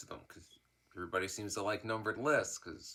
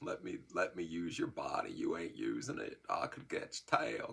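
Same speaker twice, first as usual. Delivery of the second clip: playful, teasing put-on politician voice; 3 semitones lower than usual. A bit where Bill Clinton tries to possess him: Bill Clinton voice. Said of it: "my little Bill Clinton's trying to possess me thing. Cause it's a voice I can still do".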